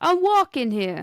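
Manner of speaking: New York accent. Asked by the other speaker to do one, the speaker does a New York accent. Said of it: "Can you do a New Yorker accent?".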